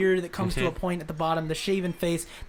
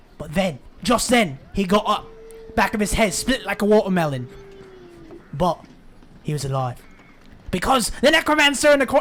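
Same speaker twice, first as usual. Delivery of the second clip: put-on British accent with a raised voice; 3 semitones higher, 7 dB louder than usual. Voicing a storyteller character after being asked to do it: british accent. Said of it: "he's the only British guy".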